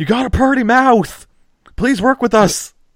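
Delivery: very high, very slow, drawn-out wailing pleading scream. Retelling a scene where people chase a man down, imitating them screaming. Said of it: "they're screaming".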